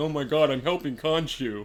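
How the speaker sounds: put-on whiny, depressed voice. Mocking a gloomy hero who helps Khonshu: imitating a whiny, depressed hero. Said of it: "Fucking whiny bitch".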